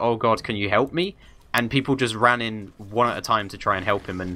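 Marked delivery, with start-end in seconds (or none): none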